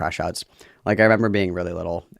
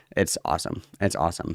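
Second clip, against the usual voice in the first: plain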